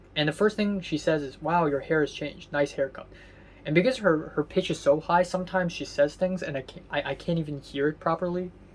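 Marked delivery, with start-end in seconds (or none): none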